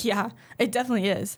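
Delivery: sarcastic tone of voice. Retelling an answer to a gullible classmate: imitating own sarcastic reply. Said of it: "really sarcastic".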